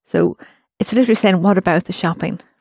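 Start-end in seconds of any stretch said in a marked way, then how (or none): none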